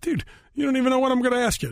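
high fast mock indignation.

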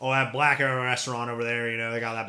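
loud, laid-on, put-on American Southern accent. Speaker demonstrates how a remark sounds, put-on Southern accent. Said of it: "basically the same thing as Southern accent was like".

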